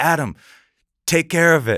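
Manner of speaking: very high-pitched, loud yell. Retelling being called out across a room: Carl Oscar yelling across a room. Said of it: "Carl Oscar yells at me from across the room".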